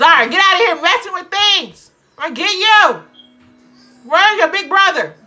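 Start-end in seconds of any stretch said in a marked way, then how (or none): 0.0-3.0 yelling, much higher and louder. Yelling at two-year-old zara for messing with things: yelling at a child. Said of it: "I'm sorry I'm yelling".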